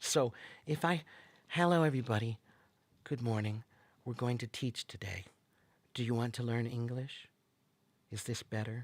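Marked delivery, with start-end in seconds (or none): 1.6-8.8 quiet, unconfident voice, lower and without volume. Showing students how speaking without volume sounds: speaking without volume. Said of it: "If you don't speak with volume".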